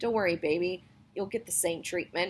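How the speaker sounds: plain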